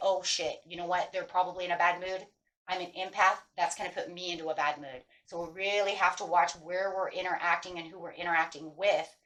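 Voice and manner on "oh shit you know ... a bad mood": ordinary talk, nothing marked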